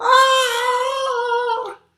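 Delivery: very high, loud scream.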